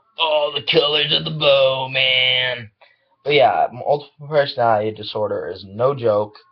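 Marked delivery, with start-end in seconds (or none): 0.2-2.7 put-on hippie voice, slow drawl, long drawn "man". Talking about accepting multiple personalities, trying out a hippie voice. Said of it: "I want to try hippie voice".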